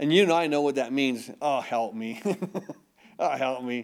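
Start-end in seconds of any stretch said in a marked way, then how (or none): 1.4-3.9 groaning, crying out. Speaker demonstrating the groanings of the Spirit to listeners, in a groaning cry. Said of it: "He just cries out".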